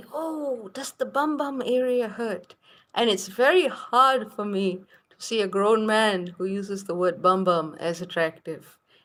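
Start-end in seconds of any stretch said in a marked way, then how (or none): 0.1-2.5 gentle, very soft, soft-spoken, pitched-up voice. Quoting a grown man's question to the speaker, imitating a very soft voice. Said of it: "he has this very soft tone of voice".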